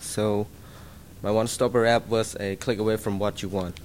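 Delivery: too soft, quiet pitch, barely audible.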